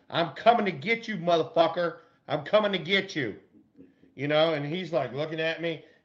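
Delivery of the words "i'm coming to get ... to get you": mock heated, threatening trash-talk style yell. Retelling yelling at an opposing player from first base, retelling a yell. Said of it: "I'm fucking yelling at Ozzie".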